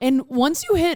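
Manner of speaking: voice cracking. Asking another speaker about turning twenty-seven: voice crack. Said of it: "sorry that I had a voice crack there".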